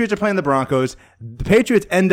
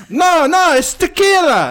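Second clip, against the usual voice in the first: very high, horrible put-on Italian accent; 12 semitones higher, 3 dB louder than usual. Retelling what a man said when handing over a cup, horrible Italian accent. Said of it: "That's a very horrible Italian accent".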